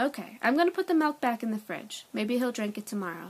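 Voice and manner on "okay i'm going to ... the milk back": plain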